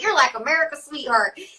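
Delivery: put-on Midwest country accent. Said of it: "a lot of Midwest, like, country people".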